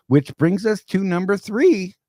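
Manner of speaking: voice breaking mid-word, very high. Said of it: "with the voice crack right there".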